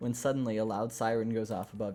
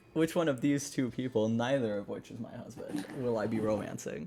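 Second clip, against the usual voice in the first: plain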